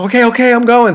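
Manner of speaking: shrill, very high, loud, upset voice. Retelling a helper's reply after being yelled at: imitating an upset helper. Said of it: "she was so upset".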